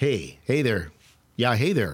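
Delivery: imitated Wisconsin accent. Show the accent that no one guessed, in a put-on Wisconsin accent. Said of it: "I can't believe no one guessed Wisconsin accent".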